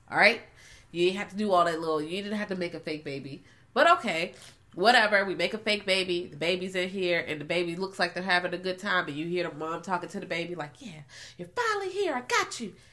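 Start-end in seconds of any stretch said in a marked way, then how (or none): 10.8-12.7 very high, swooping, sinister creepy villain voice. Retelling a movie mother talking to her unborn baby: imitating a villain who kidnapped a baby. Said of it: "sounds like a villain kidnapped a baby".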